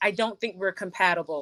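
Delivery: normal talking voice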